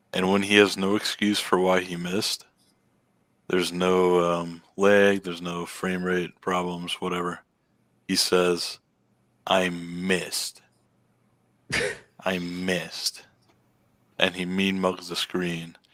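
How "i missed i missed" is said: acted, very drawn-out, very slow, daring, sarcastic tone. Describing how he reacts after missing, imitating his sarcastic 'i missed'. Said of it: "he says it so sarcastically".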